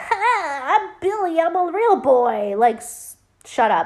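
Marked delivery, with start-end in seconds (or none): 0.0-2.6 annoying high voice with drawn-out "ha". Retelling a movie scene where Billy speaks: annoying Billy voice. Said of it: "I hate Billy's voice. It's so annoying".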